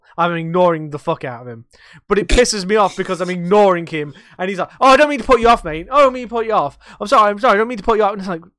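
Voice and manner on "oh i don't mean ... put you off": high, loud, hyperactive, repeating over and over. Retelling what a repetitive, hyperactive gentleman who comes in says: imitating a repetitive, hyperactive man. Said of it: "he's repetitive, he's hyperactive".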